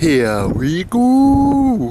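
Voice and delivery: put-on strong Welsh accent, sing-song lilt. Speaker quotes what Ralph would say if he were here: strong Welsh accent. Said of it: "in a strong Welsh accent".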